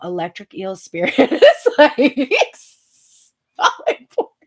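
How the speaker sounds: loud, swooping speech breaking into laughter. Describing the Electric Eel Spirit card, laughing while talking. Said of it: "I can't read without laughing".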